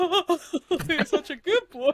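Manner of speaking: sobbing voice. Retelling own reaction while watching the film with Mike, imitating own crying. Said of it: "full on crying".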